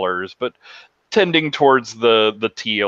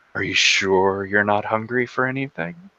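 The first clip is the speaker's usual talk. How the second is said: whispering. Voicing Laszlo leaning in close to a player character: whispering. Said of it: "leans in closer and whispers".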